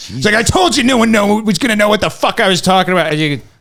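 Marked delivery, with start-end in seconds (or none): 0.3-3.1 screaming, higher pitch. Retelling a TV host screaming at his writers: imitating someone screaming. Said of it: "screaming at his writers".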